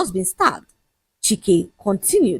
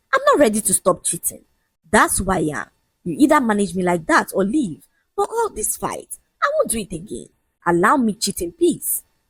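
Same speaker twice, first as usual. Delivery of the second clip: ordinary delivery, nothing marked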